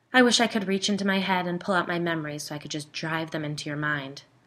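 plain

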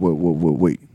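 mock gruff famous-person voice. Retelling what Ron Perlman said at a Comic Con: Ron Perlman impression. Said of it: "a really good impression of Ron Perlman".

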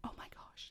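soft hushed whisper. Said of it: "whisper, whisper".

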